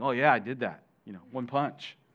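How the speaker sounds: mock proud, boastful, show-off tone. Retelling a son boasting about the hole in the door: imitating someone prideful. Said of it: "a prideful thing".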